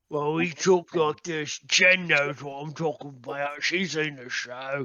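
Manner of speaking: put-on Birmingham accent. Explaining how the cast of the show talks, in a birmingham accent. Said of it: "We're all talking like we're from fucking Birmingham".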